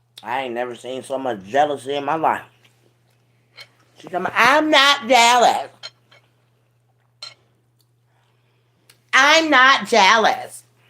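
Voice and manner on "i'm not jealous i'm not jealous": put-on very high, drawn-out valley girl voice. Retelling what she says when called jealous: imitating Rod's valley girl voice. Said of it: "talking like a daggone valley girl".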